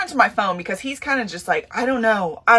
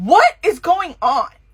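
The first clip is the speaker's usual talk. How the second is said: mock scared, alarmed yell; 4 semitones higher than usual. Telling of hearing a boom in their RV, retelling a yell. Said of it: "And I yell".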